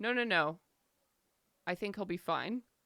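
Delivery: dry, unbothered, dead straight delivery. Narrator retelling Min's answer to the group, Min's deadpan reply, retold. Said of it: "In the most deadpan um, voice she possibly could".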